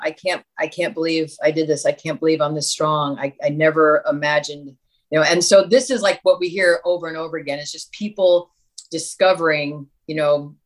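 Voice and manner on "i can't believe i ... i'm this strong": acted, imitated crying, tearful voice. Recounting a survivor sitting on the stairs, imitating her crying words. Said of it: "sitting on the stairs crying".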